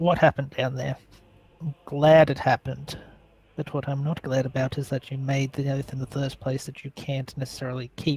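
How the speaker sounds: speaking low in a hushed tone. Playing a sorcerer character, speaking to another character in a hushed tone. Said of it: "I say this in a hushed tone".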